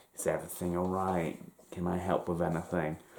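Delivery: put-on unsettling, creepy old man voice. Retelling a stranger offering help in an alley: imitating a creepy old man. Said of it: "this creepy old man emerges".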